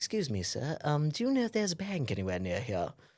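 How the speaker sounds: posh gentleman voice. Retelling being asked for directions by a stranger, the speaker mimics him: posh voice. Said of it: "he was a very posh guy as well".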